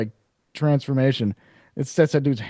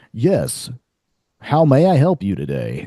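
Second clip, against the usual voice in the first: very slow, refined, composed, sing-song polite voice. Speaker imitates how the monster in a movie talks, collected, refined voice. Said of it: "when he speaks".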